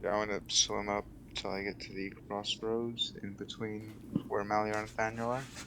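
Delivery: barely audible, very quiet voice.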